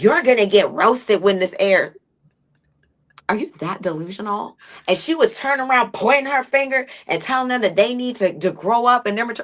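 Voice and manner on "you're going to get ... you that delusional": acted-out, mock defensive tone. Recapping an argument among cast members, mock-defensive. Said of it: "she's getting all defensive and stuff".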